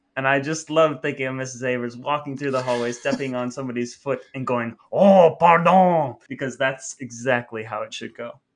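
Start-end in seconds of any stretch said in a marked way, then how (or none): 4.9-6.2 very loud, high, put-on French accent. Picturing Mrs. Avers apologizing in the hallway, imitating her French accent. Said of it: "she did it in a French accent".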